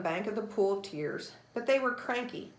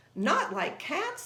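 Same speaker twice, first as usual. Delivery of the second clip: shrill, high-pitched storybook mouse voice; 7 semitones higher than usual. Reading a story, a mouse retorts to a girl who mentioned cats: shrill. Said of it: "the mouse said in a shrill voice".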